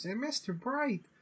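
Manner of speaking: put-on very high, small little girl voice. Recalling the same show's narrator suddenly doing a little girl voice. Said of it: "a little girl out of nowhere goes".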